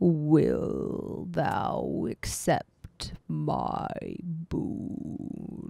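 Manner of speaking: whispered, deep, breathy monk voice. Describing a creature nodding at high speed, voicing its question, deep voice. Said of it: "asks in a deep voice".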